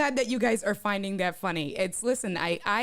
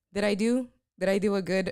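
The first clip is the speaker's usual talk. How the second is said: ordinary talk, nothing marked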